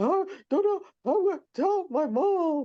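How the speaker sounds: very high, acted, panicked gasping hyperventilation. Retelling finding out she was pregnant again, acting out hyperventilating. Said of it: "And I'm literally hyperventilating".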